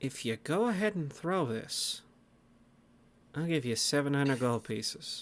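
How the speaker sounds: very quiet, close, confidential murmur. A player's character speaks to another in a game, very quiet in the ear. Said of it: "Just very quiet in your ear".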